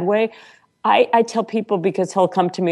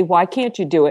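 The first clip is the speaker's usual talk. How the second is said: very sweet, sugary tone. Retelling what the husband asked after she balked: imitating a very sweet question. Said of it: "just very sweetly".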